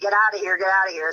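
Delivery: ordinary delivery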